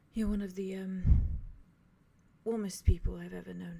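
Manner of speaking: very soft hushed whisper. Voicing a character holding someone close, speaking into their ear: very soft hushed voice. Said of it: "very softly says".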